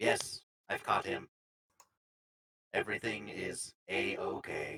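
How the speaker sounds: very low, robotic voice. Retelling a scene where a robot speaks through a record, Atari's robot voice. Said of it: "Atari's robot voice comes through. It goes".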